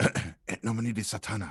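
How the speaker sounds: quiet, soft whisper. Whispering a Satanic incantation while touching an ally's ankle: whispering an incantation. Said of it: "I will whisper as quietly as I can".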